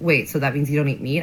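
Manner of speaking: plain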